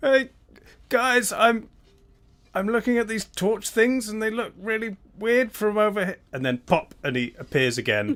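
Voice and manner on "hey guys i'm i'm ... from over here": distant, muffled, echoing, very high-pitched voice. Voicing Xander calling from another plane: muffled, echoing voice. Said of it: "muffled, but, uh, familiar as Xander calls".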